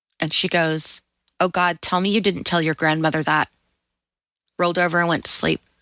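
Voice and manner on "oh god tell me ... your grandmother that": put-on hushed, very quiet voice. Retelling a mother's reply after hearing the truth: imitating someone speaking very quietly. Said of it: "she got real quiet".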